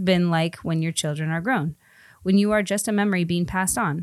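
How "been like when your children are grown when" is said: usual speaking voice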